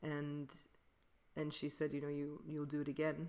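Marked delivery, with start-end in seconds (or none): 1.9-3.3 put-on thick Belgian French accent. Retelling what a woman at a workshop told her, in a thick belgian french accent. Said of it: "with her very thick Belgian French accent".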